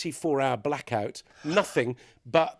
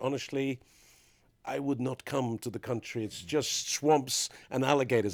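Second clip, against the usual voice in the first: put-on Dutch accent; 2 semitones lower, 4 dB quieter than usual. Retelling what a man at the embassy of Guyana said on the phone, in Dutch accent. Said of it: "I don't know why he was talking in a Dutch accent".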